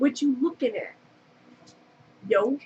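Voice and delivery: talking like a New Yorker. Describing the accent they used to have, talking like they're from New York. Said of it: "like I'm from New York".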